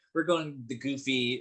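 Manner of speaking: usual speaking voice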